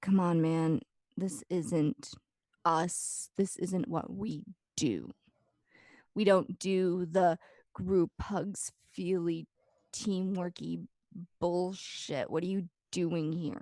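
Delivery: slow, drawn-out monster-like beast voice. Voicing a character's inner beast, which scoffs at teamwork: voicing the beast's inner voice. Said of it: "you hear the voice in your head just being like".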